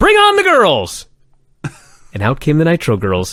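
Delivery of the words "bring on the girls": mock, shrill, very high screaming. Retelling an announcer pounding the desk: imitating Tony screaming. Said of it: "Tony punching the desk and then screaming".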